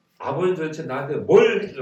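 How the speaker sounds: loud, angry, indignant shouting.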